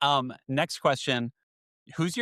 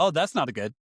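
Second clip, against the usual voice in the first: put-on sarcastic tone. Retelling own talk after stubbing the tongue: retelling own sarcastic remark. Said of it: "with my sarcastic personality".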